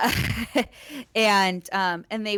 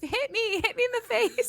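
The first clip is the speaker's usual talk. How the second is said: mock furious scream, pitched way up; 13 semitones higher than usual. Retelling a fight, daring someone to hit: imitating own screaming. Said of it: "at me screaming".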